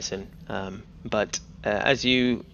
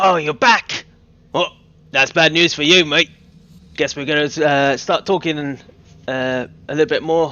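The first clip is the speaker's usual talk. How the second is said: booming, very loud, high-pitched goblinoid voice; 6 semitones higher, 10 dB louder than usual. Voicing a goblinoid prisoner greeting the returned captives: goblinoid voice. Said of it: "the goblinoid on the other side go".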